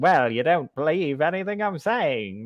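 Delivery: put-on old-timey mid-Atlantic accent, neither British nor American. Describing an old-timey voice neither British nor American, Katharine Hepburn-style accent. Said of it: "not quite British, it's not quite American".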